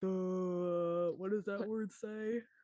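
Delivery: slow, drawling cartoon-character voice, "duh" stretched out. Joking about struggling to read a book's fancy wording: Patrick Star voice. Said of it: "I'm gonna be like Patrick Star".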